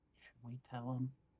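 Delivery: half-whispered, very soft and hushed. Half-whispering into another character's ear about telling him something: half-whispering. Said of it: "I'm just gonna whisper into Leo's ear".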